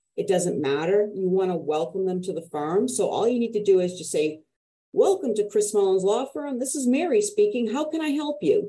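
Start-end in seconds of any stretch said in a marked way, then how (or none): 4.9-8.7 big, smiling, pitched-up voice. Answering the phone at a law firm, in a big voice with a smile. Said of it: "I had a big voice and a big smile in my voice".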